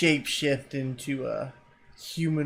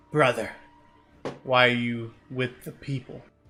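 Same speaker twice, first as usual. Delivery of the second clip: put-on half-orc voice. Voicing a half-orc who speaks to Gale in orc, half-orc voice. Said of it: "he starts talking in orc to Gale".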